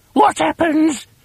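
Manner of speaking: gasping with a very high voice. Narrator reading a woman's question in a story, gasped. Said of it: "Gasped Mrs".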